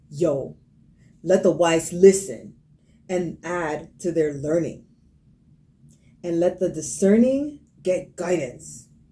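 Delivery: bad, put-on, slow, angry New York accent. Reading a verse aloud in an assigned accent: angry New York accent. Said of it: "Angry New Yorker".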